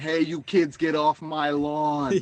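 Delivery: put-on very slow old man voice. Joking about becoming the neighbor who yells at kids: old man voice. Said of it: "I'm gonna end up being that old man".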